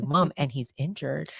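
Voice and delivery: ordinary talk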